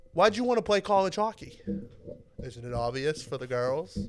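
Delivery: put-on strong, loud Boston-accented voice. Quoting a favorite hockey movie line, doing Jack O'Callahan's Boston accent. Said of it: "the Boston accent".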